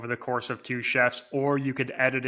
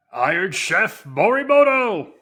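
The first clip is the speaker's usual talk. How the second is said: dramatic announcer voice, higher and louder; 8 semitones higher, 8 dB louder than usual. Announcing the winner after being asked to do the voice: announcer winner-reveal voice. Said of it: "you gotta do the voice".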